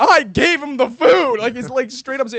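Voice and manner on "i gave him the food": booming, very loud, slow drawn-out shout. Recounting what a kid yelled about a traded lunch, retelling a yell. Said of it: "Josh is yelling at her like".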